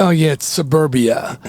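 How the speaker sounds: plain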